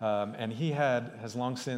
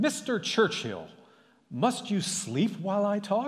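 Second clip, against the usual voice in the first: play-acted, very high-pitched yell; 9 semitones higher, 4 dB louder than usual. Telling an anecdote, quoting a woman waking a dozing man, retelling a yell. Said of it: "she woke Sir Winston by yelling".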